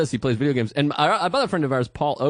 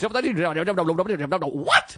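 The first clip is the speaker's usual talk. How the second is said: put-on, stretched, drawn-out exclamation; 4 semitones higher than usual. Imitating a roommate who yells while playing video games: imitating roommate's gaming outburst. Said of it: "You just hear him be like".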